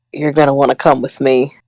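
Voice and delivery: threatening, intimidating whisper. Playing a character who grabs someone's arm and leans in: whispering threateningly. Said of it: "lean down and whisper and say".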